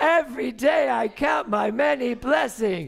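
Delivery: high, loud, slow cheer with laughter. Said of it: "Maybe they could do it as a cheer".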